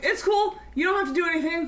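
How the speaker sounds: high, sarcastic, dismissive brush-off. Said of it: "and then I'm like".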